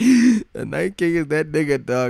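high, loud, hyped-up put-on voice.

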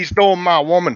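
thick put-on southern drawl. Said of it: "super heavy southern drawl".

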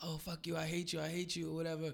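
mock screaming. Recounting a woman's story of screaming at her late assistant: retelling a scream. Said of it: "screaming at him like".

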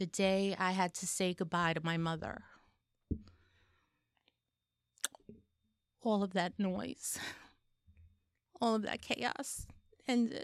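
tearful, weeping, crying through the words. Recounting fourteen months of caring for a mother and what came after, crying. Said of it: "I didn't mean to cry".

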